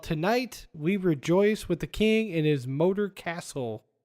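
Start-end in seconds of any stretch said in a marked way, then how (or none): none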